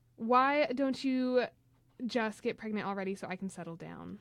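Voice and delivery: ordinary talk, nothing marked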